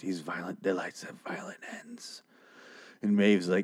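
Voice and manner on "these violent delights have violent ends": hushed, secretive, barely voiced whisper. Retelling a scene where one character whispers to another: imitating a whisper. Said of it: "And then she whispers to her".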